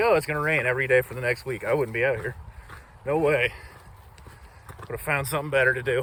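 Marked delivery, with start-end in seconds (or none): none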